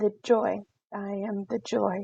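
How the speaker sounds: small, sad, soft, slow voice, cracking. Player voices Lyra introducing herself after stopping herself, voice cracking. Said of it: "And little voice cracks".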